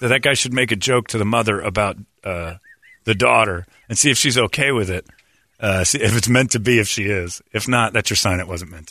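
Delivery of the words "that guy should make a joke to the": plain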